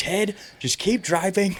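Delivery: shrill, very high-pitched yell. Recall a late-night drive to Santa Barbara when mom yelled at Ted, imitating mom yelling. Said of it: "my mom starts yelling at him".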